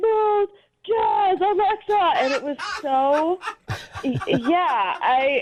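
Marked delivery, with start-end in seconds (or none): 0.0-2.1 very high, insistent, repeated yelling. Retelling how a date repeated the command: imitating someone yelling. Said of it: "so he just kept yelling".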